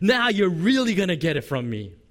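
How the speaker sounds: put-on angry, scolding shout. Acting out a hypothetical harsh divine reply to the people: imitating someone yelling. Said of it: "yelling at the people going".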